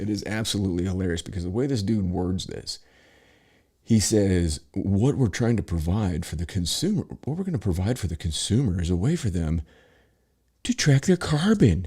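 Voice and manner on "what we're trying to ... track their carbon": put-on self-satisfied, magnanimous, doing-you-a-favor tone. Quoting how a dude worded his pitch to consumers, mock doing-you-a-favor tone. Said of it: "this voice of like, he's really like they're doing somebody a favor".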